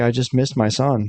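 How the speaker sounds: ordinary talk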